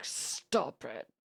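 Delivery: hushed whisper through clenched, gritted teeth. Recounting telling someone to stay off their YouTube: mimicking talking through teeth. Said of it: "that voice where you're talking out of your teeth".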